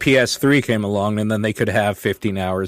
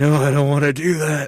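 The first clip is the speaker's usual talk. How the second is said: weary, worn-out, tired voice, pitched up; 5 semitones higher than usual. Imitating the other speaker's refusal: imitating a tired voice. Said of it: "sounded almost like you were just tired".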